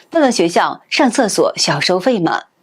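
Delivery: ordinary delivery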